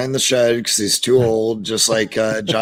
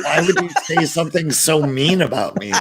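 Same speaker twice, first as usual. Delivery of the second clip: higher-pitched put-on nerdy voice; 6 semitones higher than usual. Joking that the questioner is really a nerd, imitating a nerd. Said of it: "Sal's just like some fucking nerd, and he's like".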